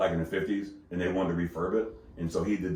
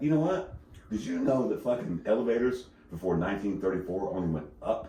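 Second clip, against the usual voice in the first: acted, totally serious deadpan with no hint of joking; 4 dB quieter than usual. Retelling a customer's made-up fact at the bar: imitating a deadpan serious claim. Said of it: "But she was so serious about it".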